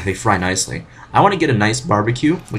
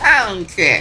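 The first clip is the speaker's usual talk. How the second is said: put-on babyish voice from an adult; 10 semitones higher than usual. Speaker shows a voice they like doing lately: put-on baby voice. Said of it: "It's like a baby voice, kind of like".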